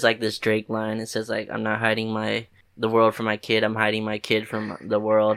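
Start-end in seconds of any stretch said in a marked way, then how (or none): none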